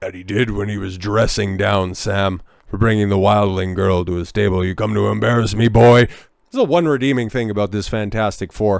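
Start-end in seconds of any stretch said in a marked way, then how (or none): 4.6-6.1 booming, deep put-on voice, louder. Under the weather, show you can match the actor dressing down Sam, in a booming, deep Ralph Ineson voice. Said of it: "I can have that same booming, deep voice".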